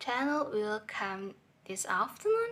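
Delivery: level start, pitch climbing high on afternoon. Intonation example, flat on 'Daniel', rising high on 'afternoon'. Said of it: "Daniel is a flat voice level, and afternoon is high voice uh, level".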